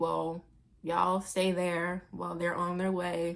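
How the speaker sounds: flat, dead-level, bored, uncaring monotone. Quoting a woman who hates her job, imitating a monotone voice. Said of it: "She was she was so monotone".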